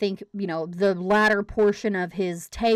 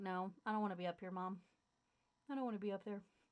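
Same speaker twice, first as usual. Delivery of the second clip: very quiet, very soft dog voice; 21 dB quieter than usual. Voicing the corgi who doesn't want to be held up: voicing the pet corgi. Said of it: "He's like".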